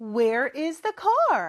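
very slow, clear, model-like delivery. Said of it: "우리 큰 목소리로 따라해볼까요".

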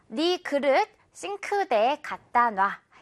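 usual speaking voice

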